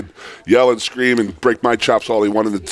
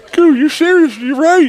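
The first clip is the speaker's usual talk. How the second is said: squeaky, very high-pitched voice; 4 dB louder than usual. Retelling what Rich said during a conversation: imitating Rich's high voice. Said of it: "it's like high voice".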